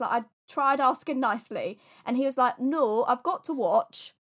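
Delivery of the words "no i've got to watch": botched, slow, put-on Welsh accent. Retelling a man who insisted on watching, in a bad Welsh accent. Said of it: "that wasn't a Welsh accent".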